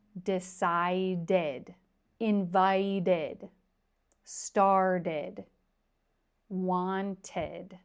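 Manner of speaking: each verb stretched out very slow and deliberate. Teacher pronouncing past-tense verbs ending in ed for learners, saying it very slowly. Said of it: "If I say it very slow".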